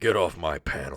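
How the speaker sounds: put-on voice, very low and deep. Joking about a convention panel, doing a Harrison Ford voice. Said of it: "that voice is hard to do".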